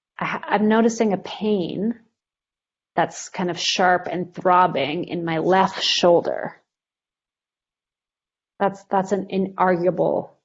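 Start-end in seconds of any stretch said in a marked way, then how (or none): none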